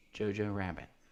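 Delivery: barely audible, very quiet half-whisper. Playing a guessing game, saying a movie title into the mic: half-whispering. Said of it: "I'll just whisper it in the mic".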